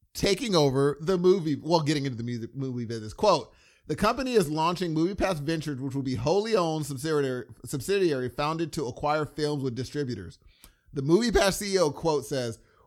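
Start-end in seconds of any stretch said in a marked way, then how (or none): none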